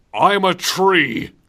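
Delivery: loud, overacted delivery. Imagining a character on stage in a nativity play: Barry Burton exclaiming. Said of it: "he's gonna exclaim".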